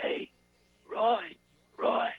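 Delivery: strained, failing voice that can barely get out. Retelling a friend at the throat doctor: imitating someone who can barely talk. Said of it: "he could barely talk".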